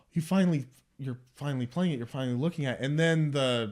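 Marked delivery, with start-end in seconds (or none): 0.2-2.9 fast, eager, thrilled excited rush of words. Acting out a character finally hearing his music played: acting out excitement. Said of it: "And he's kind of excited".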